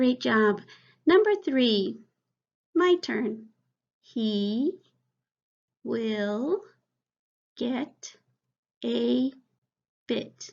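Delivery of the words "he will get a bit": choppy, halting, broken-up word-by-word reading. Reading a practice sentence to the class before the fluent version, halting, less fluent reading. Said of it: "Now I'm going to read it more fluently".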